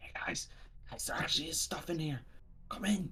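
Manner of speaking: hushed, very quiet whisper. Calling in character to the others outside: whispering. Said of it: "whisper to outside and just go like".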